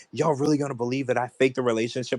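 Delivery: plain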